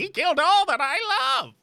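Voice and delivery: very high, loud skeleton character voice. While playing a game, a player voices the skeleton: skeleton voice. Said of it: "Do we do skeleton voice for the skeleton?".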